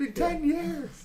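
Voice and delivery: put-on, very high-pitched, frantic screaming voice. Recounting a film scene, imitating a character screaming at another character. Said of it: "like screaming 10 years at him".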